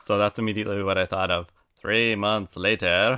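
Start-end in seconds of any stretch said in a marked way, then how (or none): 1.8-3.2 put-on French accent in a title-card narrator style. Imitating a show's title card, in a french accent. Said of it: "In this great French accent".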